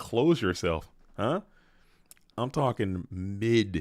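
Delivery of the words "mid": emphasis on "mid". Talking about the mid guard, the speaker insists, with stress on "mid". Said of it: "Emphasis on the id on the mid".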